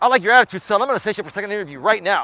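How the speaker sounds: fast, excited, gung-ho military voice. Retelling the interviewer's reply to a good answer: imitating an excited military voice. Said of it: "this military dude gets all excited".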